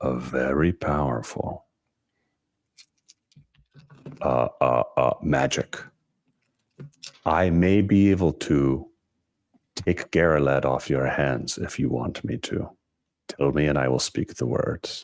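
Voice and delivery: whispered tone. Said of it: "say in a whispered tone".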